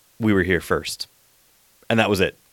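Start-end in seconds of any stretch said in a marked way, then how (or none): 0.2-1.1 imitated deadpan delivery, lower pitch. Retelling a character's quick reply to an abductee, retelling a deadpan line. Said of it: "David, deadpan, was like".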